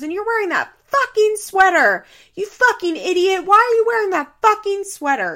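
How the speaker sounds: high-pitched, furious screaming rant. Retelling how a woman flipped out at a man after the breakfast place was closed, imitating someone screaming. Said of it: "she's screaming at Andrew".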